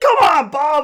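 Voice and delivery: high, shrill, loud, stressed, frustrated yell. Retelling a board game where Bob Ross kept winning: imitating own past yelling. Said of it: "yelling at Bob".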